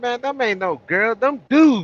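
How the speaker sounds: mock too-loud voice. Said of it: "I said it too loud though".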